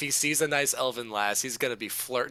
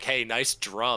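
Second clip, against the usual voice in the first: put-on drunken voice. Suggesting how to approach someone playing a drum, the speaker demonstrates: drunk party small talk. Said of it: "regular stupid drunk talk that you do at parties".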